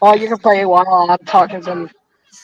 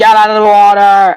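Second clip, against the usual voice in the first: ordinary delivery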